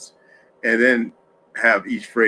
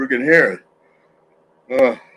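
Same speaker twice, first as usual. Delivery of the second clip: yawning while talking, louder; 4 semitones higher, 5 dB louder than usual. Talking to someone scratching at the shoes, yawning while talking. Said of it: "excuse me for yawning".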